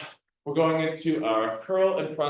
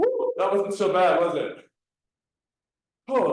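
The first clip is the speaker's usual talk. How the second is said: winded, breathless, panting, catching breath; 3 semitones higher than usual. Just finishing a counted exercise round, out of breath. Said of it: "let me catch my breath for a sec".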